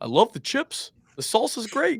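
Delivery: very high, swooping, sing-song promo-style delivery. Retelling an old stadium promo at a restaurant: Kirk Ferentz voice. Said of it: "it's like Kirk in his voice".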